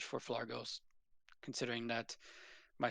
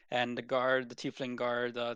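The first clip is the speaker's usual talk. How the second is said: ordinary talk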